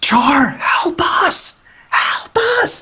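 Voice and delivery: very high, drawn-out, full-lung yell. Calling up to Char for help during a fight: yelling as loud as possible. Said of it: "I'm going to yell, uh, as loud as I can".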